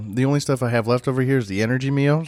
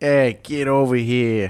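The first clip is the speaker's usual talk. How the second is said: knockoff Chicago mob-style accent. Calling someone to come over, in a knockoff chicago accent. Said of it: "That knockoff Chicagoan?".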